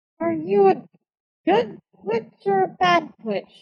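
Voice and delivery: drowsy, groggy, high-pitched, barely awake voice. Voicing a character waking up after a stim: groggy, just waking up. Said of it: "Setsa just looks up groggily after a moment and says".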